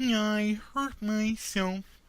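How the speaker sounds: frog puppet character voice. Doing an impression asked for by others: Kermit the Frog voice. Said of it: "Kermit the Frog".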